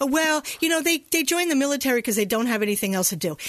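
ordinary talk

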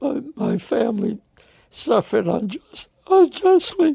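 tearful crying, voice rising high. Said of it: "I'm shedding some tears right now".

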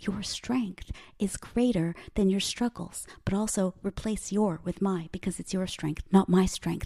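hushed whisper. A speaker leads listeners in repeating an affirmation, whispering. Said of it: "why am I whispering?".

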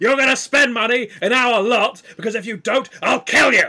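frenzied, angry, manic enthusiasm, very loud and high. Playing a car salesman, the speaker pushes listeners to buy: manic, angry enthusiasm. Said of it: "you get a little manic".

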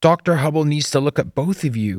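loud, high-pitched shout. Shouting to two others over a revving truck engine. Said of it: "Doug shouted over the revving engine".

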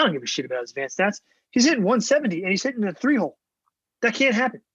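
worked-up, frustrated, fired-up outburst, pitch climbing. Talking to someone about a Nats hitter's numbers, getting fired up. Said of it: "I'm getting fired up about this".

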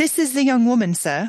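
put-on English accent, theatrical stage delivery. Reading a play's opening line aloud in a group reading: attempted english accent. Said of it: "try my hand at an English accent".

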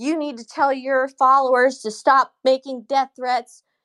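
put-on judge yelling. Speaker recounts how a judge yelled at them, retelling the judge's yell. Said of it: "yelling at me".

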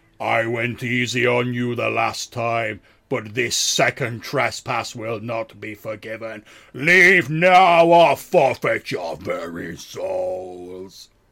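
very loud, resounding, booming voice. Game master voices a disembodied voice coming from the moss, in a booming voice. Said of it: "the voice is like booming out from the moss".

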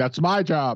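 mock, restrained, mild screamed outburst. Joking about trash thrown into the octagon, imitating Mick Maynard screaming. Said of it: "starts screaming".

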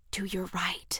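whispered, whispering. Spotting a man across the field, a friend tells her where, whispered. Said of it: "Jeremy Stage whispered".

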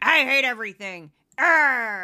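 put-on loud, grumpy old-man voice, stretched-out "arr". Mocking a news channel's audience, in a grumpy Statler and Waldorf impression. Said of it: "just get grumpy old men".

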